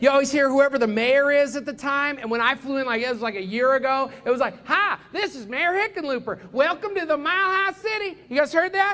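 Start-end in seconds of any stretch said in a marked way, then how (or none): 4.7-8.2 put-on pitched-up Southern accent. Recalling the mayor's greeting on the Denver airport train: Southern-accent Hickenlooper impression. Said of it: "Nobody speaks with a Southern accent in Denver".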